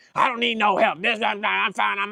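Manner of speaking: acted, held-back half-shout, mild and level-pitched. Retelling how a man with a flat tire refused help: imitating a man yelling. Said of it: "he's sitting there yelling at me".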